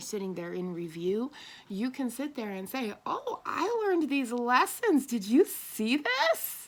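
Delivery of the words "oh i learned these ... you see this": play-acted thrilled, gushing, loud and swooping. Acting out someone showing off lessons learned: acting out excitement. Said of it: "And you're excited".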